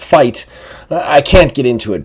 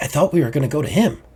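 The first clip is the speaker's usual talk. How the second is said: soft half-whispered voice; 3 semitones higher, 6 dB quieter than usual. Voicing a character who speaks from behind the player: half-whispering character line. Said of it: "Kinda, like, whisper it".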